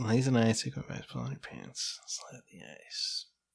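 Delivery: whispered, sexy, seductive under-the-breath murmur. Repeating another player's line back to them: mock sexy, under the breath. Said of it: "Why did you say it so sexually, like, underneath your breath?".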